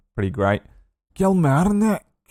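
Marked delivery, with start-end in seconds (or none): 1.2-2.0 put-on Scottish accent, pitched very high. Saying the place name they most enjoy saying, in a Scottish accent. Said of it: "I just like saying kill Marnik in a Scottish accent".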